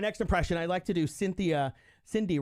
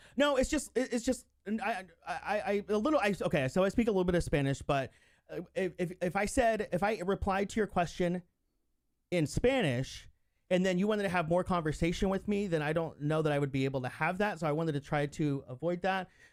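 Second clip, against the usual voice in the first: ordinary delivery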